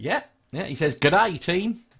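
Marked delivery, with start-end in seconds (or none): 1.0-1.8 bad fake Australian accent, much higher. Reading out a newcomer's greeting to the team, bad Australian accent. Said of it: "that's the worst accent".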